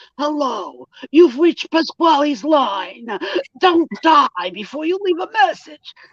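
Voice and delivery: put-on mobster Jersey accent. Mimicking a man's voicemail greeting in his Jersey accent: Tony Soprano-style Jersey accent. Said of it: "he sort of does it like Tony Soprano".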